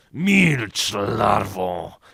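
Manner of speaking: low hiss, drawn out. An older brother grabs at his younger brother's diary, hissing. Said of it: "Wysyczał Karolek".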